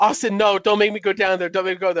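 put-on little-kid voice, tearful crying and screaming. Retelling a moment in the bread aisle, imitating your little brother crying and screaming. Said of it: "my little brother is crying and screaming".

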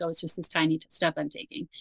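ordinary delivery

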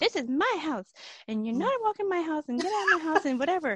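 put-on small, high, three-year-old toddler voice. Retelling the three-year-old daughter talking to some person in the new house: little three-year-old voice. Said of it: "in her little three-year-old voice".

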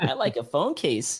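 ordinary delivery

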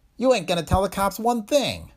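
very high, slightly shrill voice. Narrating a story, a man speaks as the door behind opens: high, slightly shrill voice. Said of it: "It was a high voice, a little shrill".

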